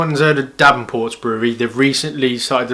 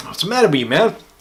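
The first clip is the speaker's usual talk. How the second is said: clumsy, fake American accent, pitched up; 6 semitones higher than usual. Scolding himself for a mistake about the can size: bad american accent. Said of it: "my bad American accent there".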